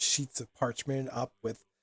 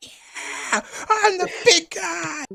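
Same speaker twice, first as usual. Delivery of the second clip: very high, very loud, shrill top-of-lungs scream; 9 dB louder than usual. Speaker retells what a guy shouted so everyone could hear, imitating him screaming. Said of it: "he's screaming at the top of his lungs".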